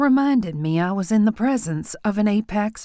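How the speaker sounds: ordinary delivery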